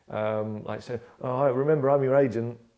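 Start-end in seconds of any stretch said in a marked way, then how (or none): 1.2-2.5 loud, play-acted, menacing, veiled threatening tone. Retelling what the agent says: imitating a threatening tone. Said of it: "she's always threatening me".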